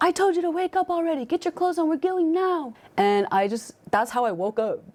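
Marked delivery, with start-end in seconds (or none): 0.0-2.7 very high, shrill, high-pitched yell. Retelling being dragged out of bed by mom: imitating mom yelling. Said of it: "yelling at me".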